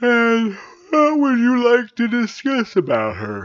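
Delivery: through a yawn. Woken early by his wife, a husband replies to her, yawning. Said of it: "he asked with a yawn".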